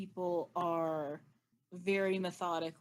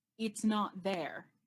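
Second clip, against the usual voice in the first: hissing female voice. Game master voicing an unseen speaker to the players: hissing female voice. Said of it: "You hear a female voice hiss".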